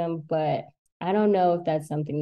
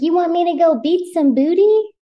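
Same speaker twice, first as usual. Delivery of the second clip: put-on very high, loud, grating voice like a sugared-up kid; 11 semitones higher, 10 dB louder than usual. Recapping a show scene, the speaker mimics Laura Lee's very annoying voice. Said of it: "her voice—this is a girl with a very annoying voice".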